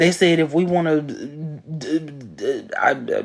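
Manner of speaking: stuttering, stammering speech. Retelling a story and losing the words mid-sentence, stuttering. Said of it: "I'm stuttering".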